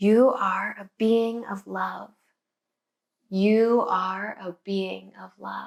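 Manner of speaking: whispering. Leading a relaxation, lying still with a stone: whispering. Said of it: "we're gonna whisper an affirmation".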